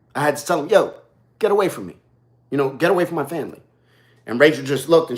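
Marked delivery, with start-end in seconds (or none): 0.7-3.6 put-on no-nonsense, firm yet respectful tone. Retelling telling a stranger to back off: imitating own firm but respectful warning. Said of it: "I had to do it very respectful, uh, but very firm".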